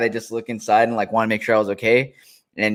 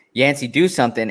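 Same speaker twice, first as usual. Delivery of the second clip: usual speaking voice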